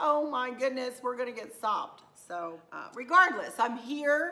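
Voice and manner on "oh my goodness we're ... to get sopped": ordinary delivery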